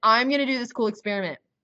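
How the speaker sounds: casual, chill dude-bro voice. Quoting Ernest announcing his experiment, since he's kind of a bro: Ernest as a dude-bro. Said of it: "he said it like that because he's kind of like a bro".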